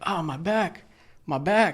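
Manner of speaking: mock high, drawn-out pained scream. Retelling how a co-driver at the fuel pump screamed: imitating someone screaming in pain. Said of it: "screaming, bro, like, in pain".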